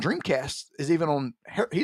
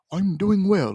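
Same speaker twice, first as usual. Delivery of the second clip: put-on British accent; 2 semitones higher than usual. Imitating the talking game creature answering back, Seaman's British accent. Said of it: "it always had, like, a British accent".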